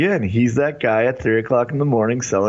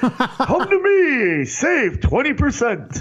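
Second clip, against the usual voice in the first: put-on ring announcer voice, higher; 13 semitones higher than usual. Acting out a late-night autopsy commercial: Howard Finkel voice. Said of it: "Why did you do it in the Howard Finkel voice?".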